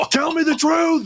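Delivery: very high, raging, furious yell. Recounting a confrontation, demanding that someone tell the truth, yelling. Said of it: "Kind of yelling at him".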